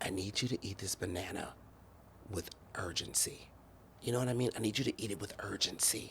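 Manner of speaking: breathy, hushed whisper, very quiet. Retelling an instruction someone gave into the ear: imitating a whisper. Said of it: "he whispers in my ear".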